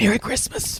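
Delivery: hushed under-the-breath murmur. Retelling how the mom quietly said it after an argument: imitating mom saying it quietly. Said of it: "I hear her quietly say".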